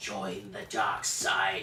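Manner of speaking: scary put-on villain voice. Doing the line after chat quotes Senator Palpatine: Palpatine voice. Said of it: "That is scary".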